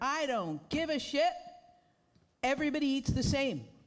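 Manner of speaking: mock yelling, high screaming rant. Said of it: "he's yelling at the promoter".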